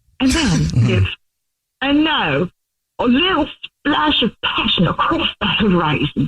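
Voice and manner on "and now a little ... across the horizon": put-on Australian accent. Speaker imitating the listener painting with wine, in an australian accent impression. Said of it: "your Australian guy".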